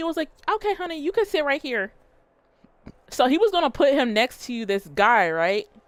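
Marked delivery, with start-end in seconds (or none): 0.5-1.9 sassy, sweet, pitched-up flight attendant voice. Retelling what a flight attendant said to a passenger: imitating a sassy flight attendant. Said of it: "he was a little sassy".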